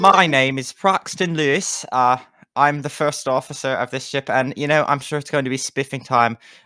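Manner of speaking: put-on British accent. Introducing themselves as the ship's first officer: British accent as Paxton Lewis. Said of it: "we're we're doing British".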